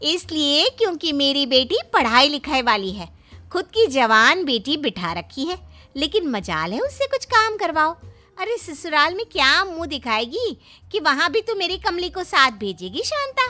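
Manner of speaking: fired-up heated scolding rant, pitch swinging up and down. A neighbour mother scolds Shanta about her daughter, in Kamli's mother character voice. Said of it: "तभी [name] की माँ और [name] की पड़ोसन बाहर निकल आती है। / तभी [name] की माँ और [name] की पड़ोसन बाहर निकल आती है।".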